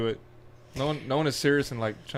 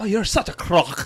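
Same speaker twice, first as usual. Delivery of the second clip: fake British accent veering Irish, pitched up; 6 semitones higher, 4 dB louder than usual. Trying out a joking insult: put-on british accent. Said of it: "is that a British?".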